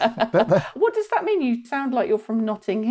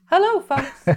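pitched-up American cartoon accent; 6 semitones higher than usual. Asking whether to do an American accent when doing Mickey Mouse, Mickey Mouse voice. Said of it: "do you remember to do an American accent".

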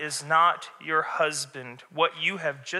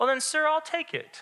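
put-on snide, taunting, mocking tone, very high-pitched; 11 semitones higher than usual. Retelling how a woman spoke to Jesus, imitating a mocking woman. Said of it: "I think the woman was a little bit mocking Jesus. So can you kind of hear it in the tone?".

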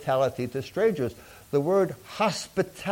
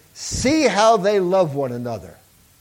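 loud, scornful sneer dripping with mockery; 3 semitones higher, 6 dB louder than usual. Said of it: "and he sneered".

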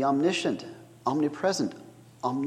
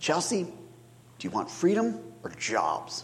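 plotting, scheming, confiding conspiratorial tone; 2 semitones higher, 4 dB quieter than usual. Retelling how a child asked his sister a question; retold conspiratorial tone. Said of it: "in a conspiratorial tone".

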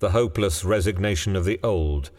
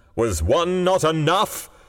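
fiercely demanding tone; 10 semitones higher, 3 dB louder than usual. Reading a story, the man answers the woman with a fierce demand. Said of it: "he demanded fiercely".

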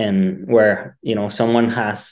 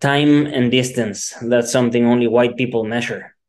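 ordinary talk, nothing marked

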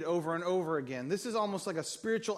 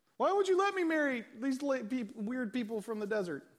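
high, put-on teenage voice; 6 semitones higher than usual. Explaining Exodus, acting out Israel as a teenager talking back, in a teenager voice. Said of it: "you can hear a teenager voice".

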